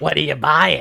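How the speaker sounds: rough, raspy, creaky put-on voice. Recalling how a character sounded: Vath's voice. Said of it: "his voice was like".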